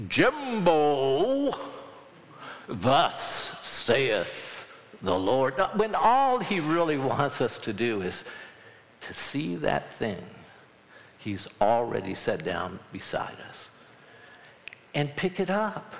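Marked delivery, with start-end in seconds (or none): 0.1-5.5 very slow, each word stretched out. Speaker acts out the voice people wait to hear from God, booming God voice. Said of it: "That booming voice".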